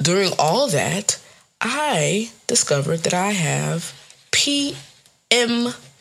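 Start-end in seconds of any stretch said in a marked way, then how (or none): 1.6-5.8 very slow, deliberate, drawn out word by word. Speaker telling listeners something, saying it slowly so they can look it up. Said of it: "I said it slow so that you can Google it".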